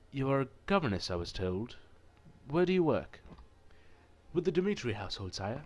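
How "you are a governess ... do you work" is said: polite, formal, courteous voice. Reading a visual novel aloud, the Marquis questions a governess: the Marquis character voice. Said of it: "It was none other than the Marquis himself. / But the Marquis was nothing but polite. He did not ogle. He did not touch unnecessarily. No audacious gestures or suggestive winks of the eye. He would no".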